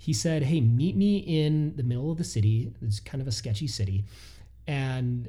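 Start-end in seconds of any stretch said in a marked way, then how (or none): none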